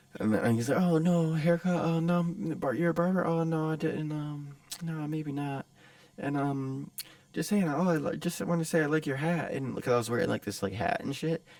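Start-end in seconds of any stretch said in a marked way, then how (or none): 0.8-9.5 put-on nervous, halting, unsure, skittish, pitched-up speech. Retelling how a stranger at the car window talked: imitating a skittish, timid voice. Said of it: "kinda, like, skittish and, like, timid".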